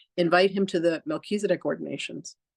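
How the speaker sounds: ordinary delivery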